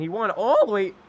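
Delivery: commentator voice that cracks and breaks. Commentating an iracing race as the leader takes the win, voice cracking. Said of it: "voice crack there".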